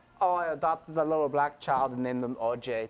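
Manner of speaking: put-on weak Austrian accent, put on. Describing a film character, quoting him: Austrian accent as Bruno. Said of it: "he has that Austrian accent".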